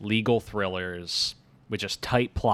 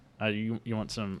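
usual speaking voice

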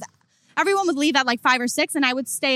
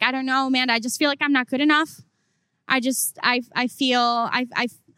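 usual speaking voice

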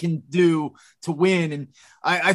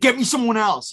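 mild yell, kept restrained and small; 5 semitones higher than usual. Imagining a team owner calling his gm: imitating someone screaming. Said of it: "screaming at his phone".

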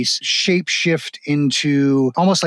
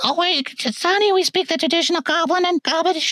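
put-on very high, frail elderly goblin crone voice. Game master voicing an elderly goblin woman answering a player's question, in her frail old voice. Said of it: "And it's actually the very, very elderly goblin woman in the wheelchair going, / and all appearance of her being a frail old woman starts to melt away as her body starts to twist and extend into a lar".

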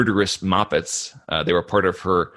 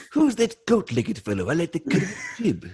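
put-on old cartoon tycoon voice, higher; 9 semitones higher, 3 dB quieter than usual. Doing a cartoon boss's line about a goat-legged fellow: Mister Burns impression. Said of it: "Mister Burns impression".

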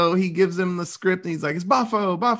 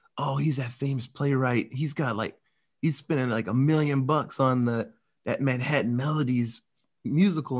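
half-whispery, hushed, voiced stage whisper; 6 semitones lower, 4 dB quieter than usual. Retelling rats half-whispering under a restaurant table: imitating a half-whisper. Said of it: "he's having them whisper under the table".

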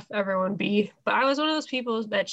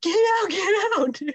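mock scream, much higher, louder; 11 semitones higher, 4 dB louder than usual. Recalling how the speaker's mom yelled from across the fence, retelling mom's screaming. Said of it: "She was just screaming like".

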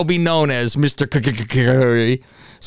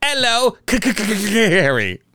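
fake British accent, higher pitch; 5 semitones higher than usual. Saying a viewer's name from over the pond: put-on British accent. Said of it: "so you probably have to say it with an accent".

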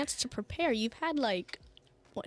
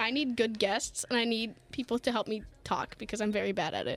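usual speaking voice

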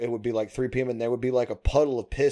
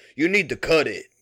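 put-on relaxed stoner voice, loud; 4 semitones higher, 5 dB louder than usual. Act out him suddenly saying this out of nowhere while you're working, in an accent kind of like Cheech. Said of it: "in like an accent, kind of like Cheech".

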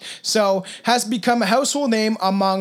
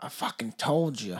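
put-on Southern accent, very low and very quiet; 9 semitones lower, 11 dB quieter than usual. Quoting someone in a story, in a put-on Southern accent. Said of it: "my voices always go like down south".

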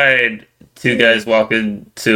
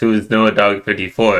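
plain

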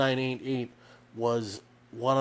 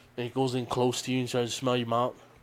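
ordinary delivery

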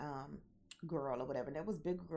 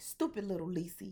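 imitated Indiana accent; 3 semitones higher, 4 dB louder than usual. Retelling what he said to her, imitating an Indiana accent. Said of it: "I'm pronouncing stupid like that because we were in Indiana".

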